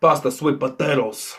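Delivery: put-on gangster voice with a Cuban accent. Doing a bit about a guest at Thanksgiving dinner: Tony Montana impression. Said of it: "this is Tony Montana at Thanksgiving dinner".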